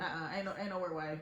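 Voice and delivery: ordinary delivery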